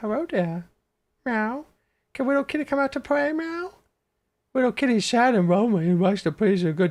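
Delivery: put-on very high, sing-song baby voice. Doing lines as Catwoman, baby voice Catwoman. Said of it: "So baby voice Catwoman".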